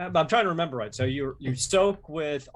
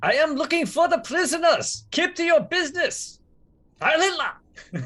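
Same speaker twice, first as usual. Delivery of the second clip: very high-pitched, loud shouting; 14 semitones higher, 5 dB louder than usual. In the story, the speaker's character answers a German who screamed out; yelling back in German. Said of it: "yell back in German".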